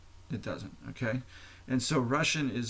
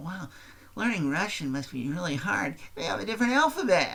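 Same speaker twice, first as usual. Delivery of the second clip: high, mocking impression. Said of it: "they go".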